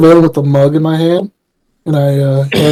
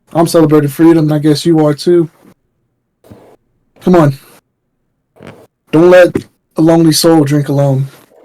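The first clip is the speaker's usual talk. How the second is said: put-on slightly drunken, tipsy voice. Speaking in character with a hand on another's shoulder, urging a drink: slightly drunken. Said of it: "little drunkenly".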